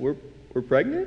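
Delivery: rising upward inflection. Retelling how she came up behind him at the dishes, with rising upward inflection. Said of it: "she said it with like an upward inflection".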